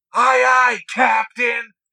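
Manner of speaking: very loud, high, belted cartoon-style voice. Retelling someone's reply when asked what do you say: SpongeBob voice. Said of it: "Straight out of fucking SpongeBob".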